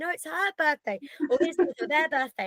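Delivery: mock, high, screaming children's voices. Retelling a party where the children shout at the speaker: imitating kids screaming. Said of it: "they're screaming like".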